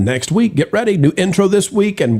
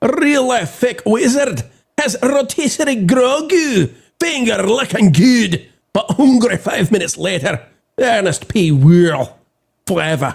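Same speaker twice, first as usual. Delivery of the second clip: Scottish accent, pitched up; 6 semitones higher than usual. Reading a submitted message aloud after a co-host asks, in a Scottish accent.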